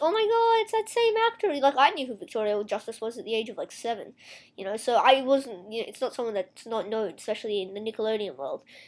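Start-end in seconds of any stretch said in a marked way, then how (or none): 0.0-1.5 put-on very high, squealing five-year-old voice. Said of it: "the five-year-olds are gonna be like".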